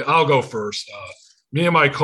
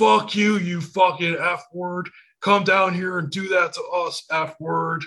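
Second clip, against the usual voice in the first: play-acted abusive heckler yelling, high-pitched; 6 semitones higher than usual. Retelling what a heckler at a concert shouted: imitating a yelling heckler. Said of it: "Just yells".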